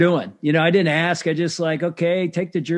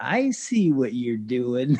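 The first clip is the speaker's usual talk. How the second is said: muttered under breath, lower and quieter; 5 semitones lower, 4 dB quieter than usual. Speaker retelling how a friend from chapel leaned over, retelling a remark under breath. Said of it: "he just leans over and under his breath".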